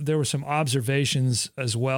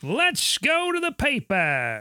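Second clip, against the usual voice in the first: put-on very high, swooping old-timey newsboy call; 11 semitones higher than usual. Host moving on to the newspaper archive segment, in an old-timey newsboy voice. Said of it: "I hear newspaper when you do that voice".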